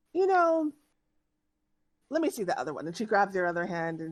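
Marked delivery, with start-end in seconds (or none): 0.2-2.9 high, curious, inquisitive, wondering tone. Narrating a scene, voicing a woman who examines the listener's hand, curious. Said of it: "says kind of curiously".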